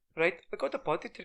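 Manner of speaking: put-on Indian accent.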